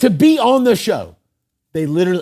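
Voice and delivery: very loud, full-throated, passionate yelling. Talking passionately about losing weight, yelling. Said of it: "I'm yelling".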